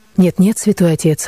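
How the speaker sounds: ordinary delivery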